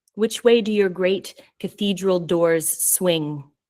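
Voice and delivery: ordinary talk, nothing marked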